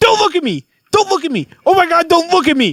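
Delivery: very high scream, pitch swooping and swinging wildly. Recounting a man screaming at him in the dark, imitating Spencer screaming. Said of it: "And he is screaming at me".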